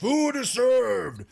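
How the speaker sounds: rough, gruff call, pitched very high. A game master voices someone aboard a ship, in a gruff voice. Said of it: "and then you see this gruff voice".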